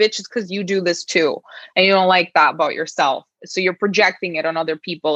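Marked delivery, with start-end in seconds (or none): none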